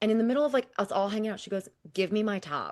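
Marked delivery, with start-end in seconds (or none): 1.9-2.7 put-on, very sassy tone. Retelling a sister's demand at a party: imitating a sassy older sister. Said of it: "in the most sassy sister, older sister way".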